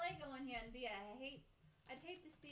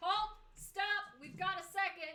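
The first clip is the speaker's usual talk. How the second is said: very loud, high-pitched, amplified-sounding booming shout; 5 semitones higher, 11 dB louder than usual. A player's character steps toward the hole to halt a mob, magically amplified shout. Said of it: "make my voice super loud and go".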